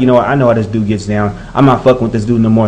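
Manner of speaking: ordinary talk, nothing marked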